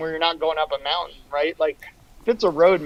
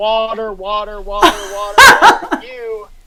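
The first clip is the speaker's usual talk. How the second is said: very loud repeated yells, pitch climbing each time; 4 semitones higher, 10 dB louder than usual. Describing coming into an aid station, retelling own yelling. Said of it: "I start like yelling like".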